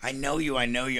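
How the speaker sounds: bubbling, giddy, starstruck excitement. Retelling a gas station visit where a young fan recognized them: imitating a giddy fan.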